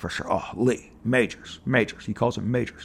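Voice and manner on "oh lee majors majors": authoritative, deep, slow lower register. Quoting a line from a documentary: Richard Anderson impression, lower register. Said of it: "it's a lower register for sure".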